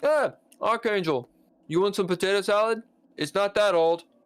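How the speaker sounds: high, garbled talk around a mouthful of food. Retelling a man offering potato salad mid-bite, faking talking with a full mouth. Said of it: "he's got this big mouthful of potato salad".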